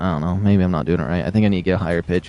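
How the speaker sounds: plain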